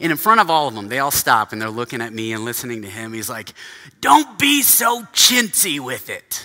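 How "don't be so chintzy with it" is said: put-on, drawn-out, slow, booming, raised voice. Quoting a man who yelled at him in front of the whole team: imitating a booming voice. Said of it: "he had this booming voice".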